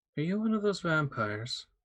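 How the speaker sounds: small, gentle mouse voice. A two foot tall mouse in clothing asks a question, in a not overly loud mouse voice. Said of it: "not an overly loud voice".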